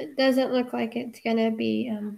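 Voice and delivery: low-energy, unexcited, trailing off with no enthusiasm.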